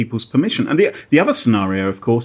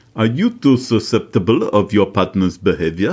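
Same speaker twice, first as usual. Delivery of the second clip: put-on East European accent; 3 semitones lower than usual. Reading a text aloud as asked, in a put-on East European accent. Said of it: "Maybe say it in an East European accent".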